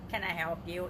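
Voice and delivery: flat, lifeless, dead deadpan tone. Acting out a store clerk at the Mall of America: mock deadpan clerk tone. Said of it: "In like a deadpan, dead tone voice".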